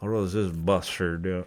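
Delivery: put-on slight Irish accent with Western New York twang. Imitating the speaker's grandpa in his final years; slight Irish, Western New York twang. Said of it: "a little like Irish, Western New York twang".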